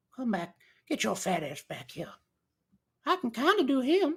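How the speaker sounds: creepy voice, rushed and rattled off quickly. Showing off Family Guy voices, doing the creepy guy down the street. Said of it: "I'm pretty good at the creepy guy down the street".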